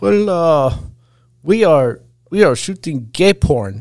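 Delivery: put-on European accent. Speaker retells a friend answering a bar patron's question, Floris's European accent. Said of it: "without missing a beat in his European accent".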